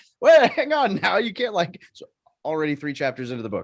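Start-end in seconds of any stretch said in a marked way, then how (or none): 0.2-1.8 put-on yelling, higher and louder. Retelling calling out from the back of the room: imitating own yelling.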